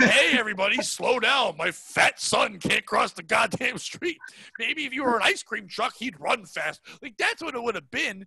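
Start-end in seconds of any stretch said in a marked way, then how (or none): 0.0-6.8 mock bitter, scornful, sarcastic, angry outburst. Imagining how a father would have said it to the street; mock sarcastic and angry. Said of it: "but with sarcasm and anger".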